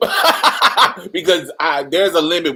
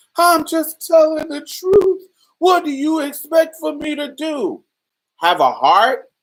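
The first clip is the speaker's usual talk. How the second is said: very high-pitched, sobbing, tearful crying voice; 11 semitones higher than usual. Retelling the grandmother's reply to the speaker's mother: imitating grandmother crying. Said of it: "Now she's crying".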